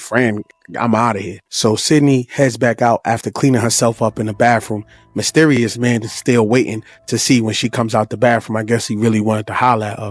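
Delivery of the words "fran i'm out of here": usual speaking voice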